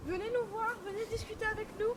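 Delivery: high, projected voice calling out.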